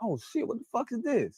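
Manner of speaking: high, caught-off-guard, hooked, intrigued exclamation. Explaining how a friend's tone reveals interest: imitating an interested, hooked tone.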